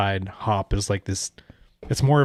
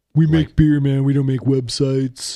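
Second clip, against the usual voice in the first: rowdy put-on voice, hollered high and loud; 5 semitones higher, 5 dB louder than usual. Joking that breweries make beer, not websites: Steve-O voice. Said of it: "Thanks, Steve-O".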